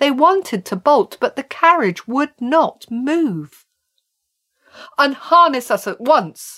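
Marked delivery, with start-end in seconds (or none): 5.0-6.6 firm, commanding, insistent demanding tone. Narrator voicing the trapped horses speaking to a strange man, demanding. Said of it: "They demanded".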